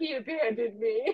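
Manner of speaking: ordinary delivery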